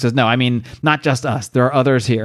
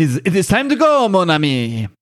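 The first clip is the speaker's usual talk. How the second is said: put-on French accent, higher, slower; 5 semitones higher than usual. Recapping a scene where Frenchie comes to Mark's room, Frenchie impression. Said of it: "What do you think of my Frenchie impression?".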